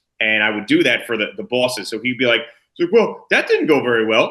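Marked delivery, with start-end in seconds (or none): 2.8-4.3 amused little laugh through words, pitched up, swooping. Do an impression for the bosses of a man who thought he was funny, imitating his little laugh. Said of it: "do this like little laugh and this sound with his voice".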